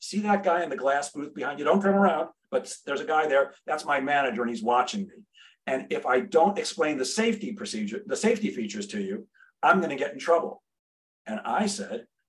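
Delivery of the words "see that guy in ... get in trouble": normal talking voice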